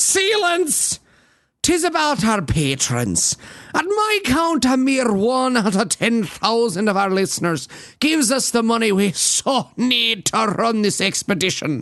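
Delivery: mock, put-on Scottish accent. A host addresses the show's listeners in a put-on Scottish accent. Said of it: "your accent sounds like Richard Dawkins doing Fat Bastard".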